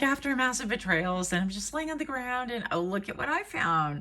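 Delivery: high, giddy, silly self-mocking voice.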